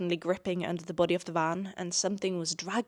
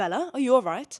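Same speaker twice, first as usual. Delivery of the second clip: posh, raised, pitched-up voice; 6 semitones higher, 5 dB louder than usual. Reading a book passage aloud, voicing a character's line to the narrator: posh Edward Cullen voice. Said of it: "every time I speak in Edward's voice, I get so posh".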